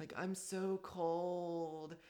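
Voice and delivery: high creepy whimper, "cold" drawn out. Speaker retells how a guy said it on the phone, imitating a creepy whimper. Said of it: "it was this like really creepy whimpering voice".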